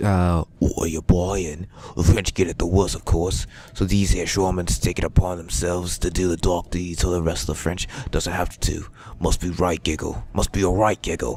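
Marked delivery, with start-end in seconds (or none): 2.0-8.9 bad, amateurish put-on Cockney accent. Voicing a shaman's lines in a bad Cockney accent. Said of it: "I'm in my shit British".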